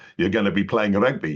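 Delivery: imitated heavy South African accent. Retelling what a man in a bar said about rugby: imitating thick South African accent. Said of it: "in his thick, uh, South African accent".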